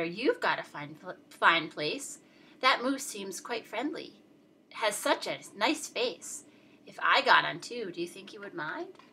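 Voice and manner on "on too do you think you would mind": ordinary delivery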